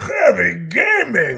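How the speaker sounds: loud, booming Russian strongman voice, swooping pitch. The voice actor, asked to say a phrase, does it in Heavy's voice. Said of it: "Say heavy gaming and in Heavy's voice".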